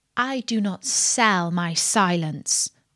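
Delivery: ordinary delivery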